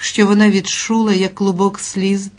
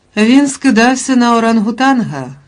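soothing, calming, comforting, reassuring tone; 4 semitones higher, 5 dB louder than usual. Rirette answers Lulu, who is upset after seeing him, soothing. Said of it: "сказала Ріретта заспокійливо".

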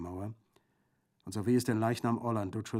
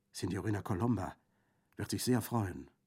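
plain

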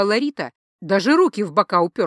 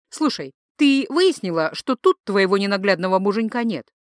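plain reading voice

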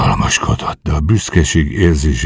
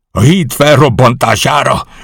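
very high-pitched, loud outcry; 9 semitones higher, 5 dB louder than usual. The colonel finds Joyce at the detonator and cries out once more. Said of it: "Kiáltott fel még egyszer az ezredes".

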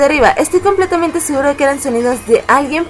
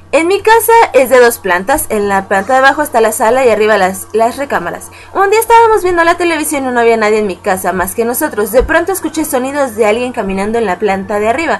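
plain

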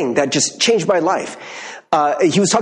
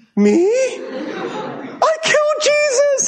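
put-on crying child voice, much higher, much slower. A man recalls being told as a child that jesus died because of him, retelling his younger self crying. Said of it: "And I'm crying".

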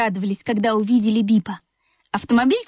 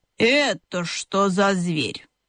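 low, slow, disgruntled, displeased grumbling; 4 semitones lower than usual. A mother hedgehog sniffs a strange toy car near her young, grumbling with displeasure. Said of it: "недовольно проворчала".

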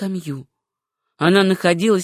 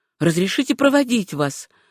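plain

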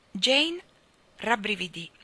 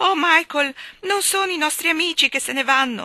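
desperate, high cry full of despair; 7 semitones higher, 7 dB louder than usual. Jane calls out to Michael, desperate cry. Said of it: "gridò Jane con voce disperata".

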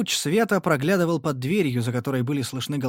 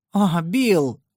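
loud, sudden crying-out exclamation; 4 semitones higher, 5 dB louder than usual. A woman, told the stranger is a ranger, cries out to the man who asked: exclaiming. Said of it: "воскликнула Лайза".

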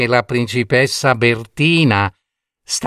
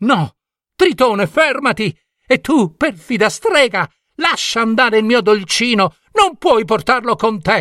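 very high-pitched, desperate crying out; 10 semitones higher than usual. Bertina calls to tritone and the witch taking her sweetheart, cried out. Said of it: "gridò Bertina".

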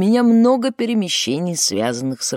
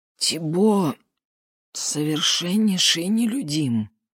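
put-on choked, strangled, wheezing voice. Questioned about another man's friends, a shaken man answers in a choked wheeze. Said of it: "прохрипел Жубер сдавленным голосом".

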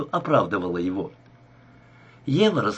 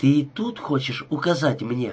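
plain reading voice

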